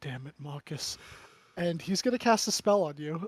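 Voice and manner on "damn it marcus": put-on mutter, much quieter, lower pitch. Recounting what another player would say to marcus: retelling a mutter under breath. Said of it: "he would say under his breath".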